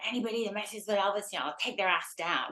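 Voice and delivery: rough, gravelly, tough-talking, threatening voice. Recalling a funny interview with Patty, quote what she said, imitating Patty's gravelly voice. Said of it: "she had this gravelly voice".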